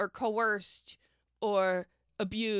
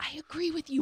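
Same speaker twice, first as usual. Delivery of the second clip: whisper, much higher pitch; 7 semitones higher than usual. Retelling a rumored phone-call story about a woman, retold whisper. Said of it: "a woman whispers".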